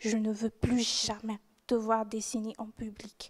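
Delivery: soft, cold, dry, curt tone.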